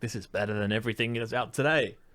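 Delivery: plain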